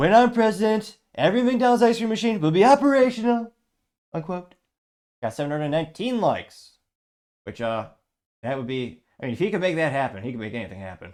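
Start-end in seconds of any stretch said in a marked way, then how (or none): 0.0-3.5 very loud, high-pitched, grand declaiming delivery. Reading a meme caption aloud, trying Donald Trump voice. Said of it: "I'll attempt to use his voice".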